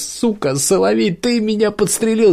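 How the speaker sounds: very high, shrill, squealing scream of pain. A man who has just been shot cries out at the shooter, screaming in pain. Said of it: "закричал он".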